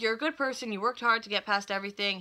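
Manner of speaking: ordinary talk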